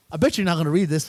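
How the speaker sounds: ordinary delivery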